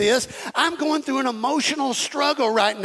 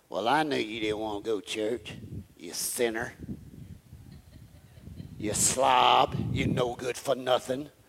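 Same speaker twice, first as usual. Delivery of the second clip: very low, growled put-on devil voice; 13 semitones lower, 8 dB quieter than usual. Describing the devil in your ear about church, put-on devil voice. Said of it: "that's the way the devil talks. I don't know if y'all know that. With that voice".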